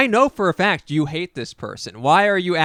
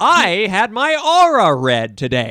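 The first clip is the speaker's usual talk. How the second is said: very slow, swooping, grand theatrical stage declamation; 3 semitones higher, 5 dB louder than usual. Imitating a seventy-year-old open micer who reads off paper: theatrical Mystery Dan impression. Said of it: "says it in, like, the most theatrical way".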